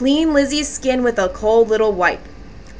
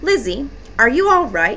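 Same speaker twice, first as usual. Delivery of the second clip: ordinary delivery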